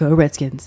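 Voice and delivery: voice dropped very deep. Imitating a newscaster picking up a mug: deep Diane Sawyer voice. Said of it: "it's a very deep".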